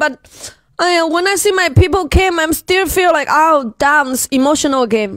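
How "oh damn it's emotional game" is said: normal talking voice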